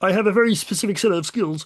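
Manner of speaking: put-on frog-like character voice, high and froggy. Impression of a father searching for his daughter, in Kermit the Frog voice. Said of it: "impression of an impression".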